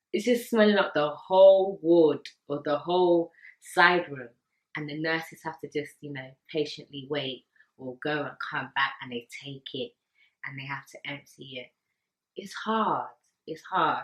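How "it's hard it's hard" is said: slow, choked-up voice, close to tears. Speaker describing the nurses' work on the ward: getting emotional. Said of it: "I don't want to get emotional".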